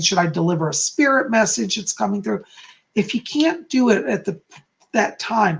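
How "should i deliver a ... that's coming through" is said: ordinary talk, nothing marked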